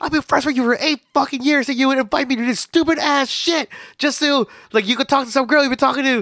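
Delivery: put-on shrill yelling, voice pitched way up. Retelling a woman yelling at a longtime friend, acting out the yelling. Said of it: "she was like yelling at him".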